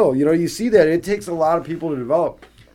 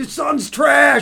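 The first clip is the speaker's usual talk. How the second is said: shrill, very high-pitched screaming; 9 semitones higher than usual. Retelling a player screaming at another about his son: imitating Colin Sexton screaming. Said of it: "screaming at Reggie Miller about his son".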